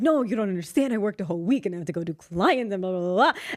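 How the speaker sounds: put-on whining, complaining tone. Retelling own past words before going to clients: imitating own past complaining. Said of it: "that's how I was acting".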